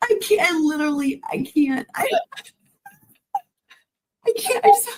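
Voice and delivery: very high, breathless, winded laughing gasps. Apologizing to the others, out of breath from laughing too hard. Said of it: "I can't catch my breath because I'm laughing too hard".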